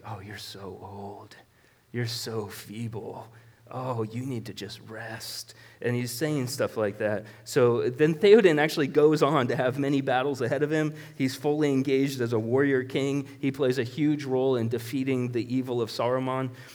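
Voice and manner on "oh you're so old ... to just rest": very quiet, hushed half-whispering. Retelling what Wormtongue kept half-whispering in the king's ear: Wormtongue half-whispering. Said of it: "Wormtongue was whispering in his ear".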